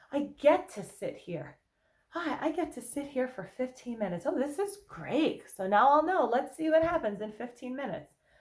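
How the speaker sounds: high, cheery, playful upbeat tone.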